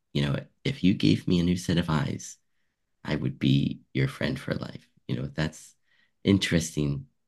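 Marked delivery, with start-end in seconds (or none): none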